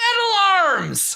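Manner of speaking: put-on very high, girlish, young girl's yell. Voicing a young girl in a silent crowd: young girl shouting. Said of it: "a young girl who shouts".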